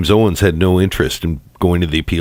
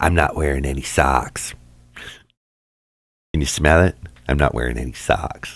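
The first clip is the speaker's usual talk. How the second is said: low, hushed, close, leaning-in whispering voice; 5 semitones lower, 6 dB quieter than usual. Retelling how a man does his Sarah voice while she whispers, Sarah Boone voice. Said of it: "leaning over and whispering in while he's doing his Sarah voice".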